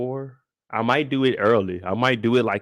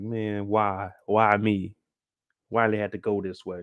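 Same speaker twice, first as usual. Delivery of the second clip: fake weeping and sobbing, drawn out; 3 semitones lower, 3 dB quieter than usual. Retelling a made-up moment kneeling in the rain: mock crying. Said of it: "was crying like".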